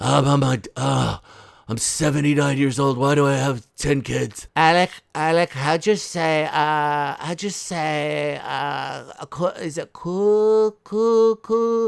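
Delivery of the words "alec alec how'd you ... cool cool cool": slow, put-on Spanish accent. Acting out an exchange, voicing Hilaria speaking to Alec in a put-on Spanish accent. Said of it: "cosplaying as a uh a Spanish person".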